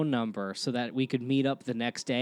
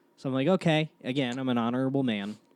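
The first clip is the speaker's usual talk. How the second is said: ordinary delivery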